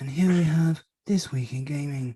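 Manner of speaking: documentary narrator voice, like wildlife film narration. Introducing the next podcast segment: David Attenborough impression. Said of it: "that's my, uh, David Attenborough".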